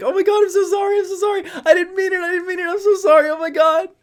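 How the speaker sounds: mock, very high, loud hysterical laughing through words. Retelling someone running away and apologizing, imitating someone laughing hysterically. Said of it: "laughing hysterically".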